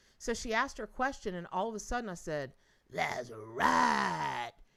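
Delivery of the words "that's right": loud, creaky, rough put-on voice. Retelling answering her question, said in a voice not my own. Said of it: "I did it just like that in a voice not my own".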